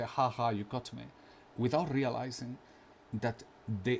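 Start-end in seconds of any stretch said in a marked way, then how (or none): none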